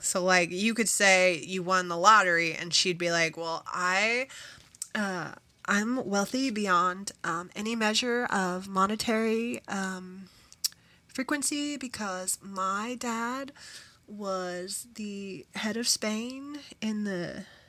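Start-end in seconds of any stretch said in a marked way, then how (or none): 3.4-17.4 slow, hesitant bragging with halting pauses and ums. Showing how the SNL character one-ups a lottery win: imitating Penelope. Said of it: "I don't do it justice".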